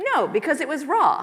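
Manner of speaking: mock self-satisfied tone. Retelling own reply to the master of burgers: imitating saying it proudly. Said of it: "I very proudly said".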